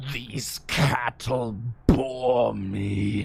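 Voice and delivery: dark, deep voice, very slow and drawn out. Recalling a subway line from the first game: dark Darkness voice impression. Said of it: "The voice would make my eyes water".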